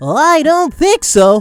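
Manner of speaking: very high, loud cartoon voice. Going through draft selections, the host quotes a cartoon line: Krillin impression. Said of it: "In the words of Krillin from Dragon Ball Z".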